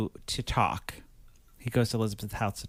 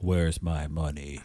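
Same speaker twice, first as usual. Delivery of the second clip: put-on, very low, deep bass voice; 7 semitones lower than usual. Telling a story about a boss demanding money, imitating the boss's deep voice. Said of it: "Got a real deep voice".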